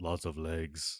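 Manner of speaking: shark-monster creature voice. Voicing King Shark as the player walks away: King Shark voice. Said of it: "And then he goes".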